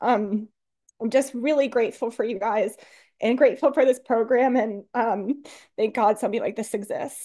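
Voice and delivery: crying, tearful, halting voice breaking mid-phrase. A speaker shares with the group and thanks them, crying while speaking. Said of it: "I don't know why I'm crying so much".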